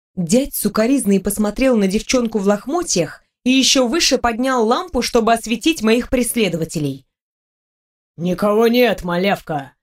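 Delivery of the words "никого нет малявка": low, dismissive, grumbling voice. Narrator reads a lamp-holding man's reply to a girl seeking protection, grumbled. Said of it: "Буркнул он".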